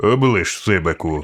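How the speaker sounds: grumpy, grumbling mutter. Kerialeyson answers Sibek, who just made a threat; grumbling. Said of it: "буркнув Керіалейсон".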